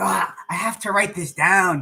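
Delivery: attempted, put-on Spanish accent. Reminded of Tanya, act out what she often says in Tanya's Spanish accent, put on. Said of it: "I'm trying to do my little Tanya Spanish accent".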